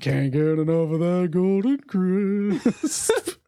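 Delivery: cartoon mascot bear voice. Imagining a friend as the cereal mascot: Sugar Bear voice. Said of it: "I'm just imagining Koza like Sugar Bear from the cereal".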